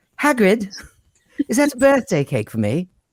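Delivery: put-on English accent, very high-pitched voice. Imagining voicing an animated Harry Potter, speaker addresses Hagrid in an English accent. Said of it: "I could do an English accent the entire time".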